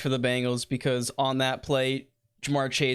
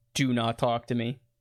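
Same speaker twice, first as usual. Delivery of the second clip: put-on stern voice. Retelling what Joe Burrow said on the sidelines: stern Joe Burrow imitation. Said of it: "the quote was very stern".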